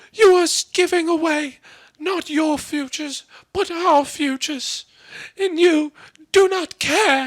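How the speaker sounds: weepy, tearful crying voice, pitched very high. Retelling a famous clip of a girl: imitating someone crying. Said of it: "one famous clip of her crying".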